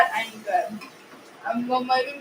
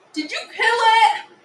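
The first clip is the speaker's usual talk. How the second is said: loud, high, teasing mocking voice, pitched up; 8 semitones higher, 5 dB louder than usual. Doing a last impression of the other speaker: mocking impression. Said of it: "She's making fun of me".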